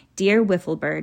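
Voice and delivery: ordinary delivery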